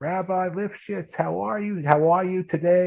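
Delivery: very squeaky, high-pitched New York voice. Recalling a neighborhood woman greeting the rabbi, squeaky imitation of Florence. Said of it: "like in a squeaky voice".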